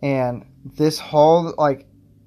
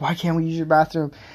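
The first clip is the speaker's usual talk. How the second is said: put-on upset man's voice; 3 semitones higher than usual. Telling a story, the speaker acts out a guy coming in upset. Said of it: "the guy comes in just all upset".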